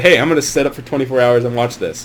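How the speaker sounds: normal talking voice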